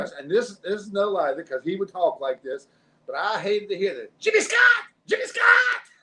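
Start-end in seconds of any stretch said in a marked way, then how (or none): 4.2-5.8 very high, loud shouting. Speaker recalls a man yelling his name at him, imitating someone yelling. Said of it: "When you start yelling my name".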